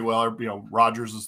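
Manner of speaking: ordinary delivery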